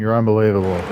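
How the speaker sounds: ordinary delivery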